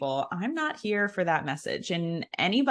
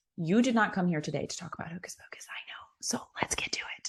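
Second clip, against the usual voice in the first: hushed, breathy whisper; 5 dB quieter than usual. Telling the audience it is time to get to the main topic, whispering. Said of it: "I don't know why I'm whispering".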